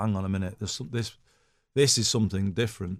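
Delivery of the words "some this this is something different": ordinary talk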